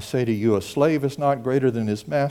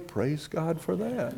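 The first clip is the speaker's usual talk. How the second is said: said much more quietly; 4 semitones higher, 10 dB quieter than usual. Speaker acts out what a listener said in response, said quietly. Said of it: "And you said quietly".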